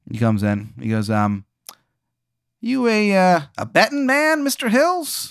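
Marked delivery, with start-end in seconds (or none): 2.6-5.3 tough 1920s hard-boiled detective voice, pitched very high. Voicing a detective knocking at a player's door: hard-boiled 1920s detective. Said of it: "like a nineteen twenties detective, hard boiled".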